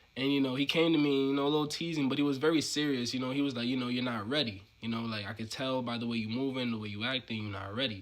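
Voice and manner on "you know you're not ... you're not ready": normal talking voice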